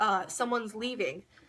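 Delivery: normal talking voice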